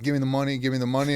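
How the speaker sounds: aggressive, pressing, imitated screaming voice. Telling of being robbed, he acts out the robber screaming at him: imitating a scream. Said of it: "he's screaming like".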